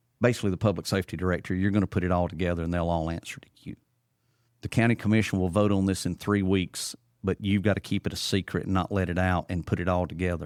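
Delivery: ordinary delivery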